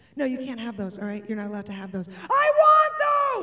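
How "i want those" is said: mock, shrill, very high, loud kid's scream. Retelling a checkout scene where he demands the candy, imitating him screaming. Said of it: "And now he's screaming".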